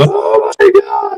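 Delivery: frantic, hysterical woman's voice, very high, panicked. Describing a woman who showed up where people were hurt, imitating a hysterical woman. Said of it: "she is just hysterical".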